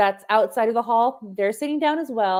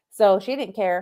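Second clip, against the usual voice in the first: normal talking voice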